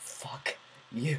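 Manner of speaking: very soft whisper, right under the breath. Retelling what someone whispered to the speaker over seating: retelling a whisper. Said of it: "he just whispers to me".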